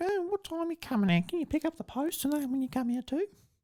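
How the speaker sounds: squeaky, very high motherly voice. Impersonating the speaker's mum asking when they're coming out: imitating mum. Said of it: "That's not a very good impression of my mum".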